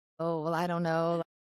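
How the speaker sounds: normal talking voice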